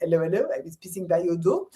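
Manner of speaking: English words in put-on French accent. Recalling a pantomime with Arthur Bostrom: 'Allo 'Allo policeman impression. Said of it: "I did pantomime with Arthur Bostrom, who was the English-speaking policeman".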